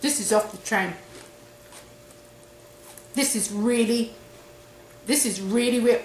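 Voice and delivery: speaking with mouth full while chewing. Tasting the dish while talking: talking with mouth full. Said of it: "speaking with my mouth full".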